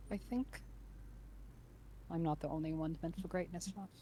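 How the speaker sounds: quiet hushed voice. Narrating a scene where one character speaks to another, in a hushed voice. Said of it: "he says in a hushed voice to him".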